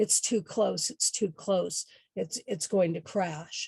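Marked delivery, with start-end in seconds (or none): none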